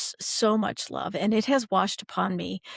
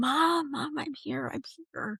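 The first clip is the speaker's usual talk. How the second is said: mock scream, pitched up; 7 semitones higher than usual. Speaker retells calling out to their mom, retelling own screaming. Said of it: "I'm screaming".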